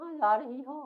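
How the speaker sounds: put-on very soft, gentle, girlish voice, very slow. Describing a boy who talks like a girl, very soft girlish voice. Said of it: "बहुत ही soft बोलता है, लड़का है लेकिन ऐसा बोलता है लड़की की तरह".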